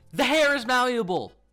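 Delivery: shrill, very high, loud yelling. Showing off a Funko figure's size to viewers, yelling. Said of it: "I don't know why I'm yelling".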